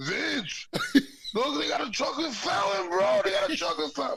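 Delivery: very high-pitched, thrilled, excited shriek. Retelling what the speaker's brother shouted out, imitating someone screaming. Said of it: "He's screaming out".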